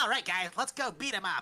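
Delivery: loud, high, exaggerated raspy cartoon-character voice. Showing an early take on a comic character's voice, even more cartoonish. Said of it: "even more cartoonish".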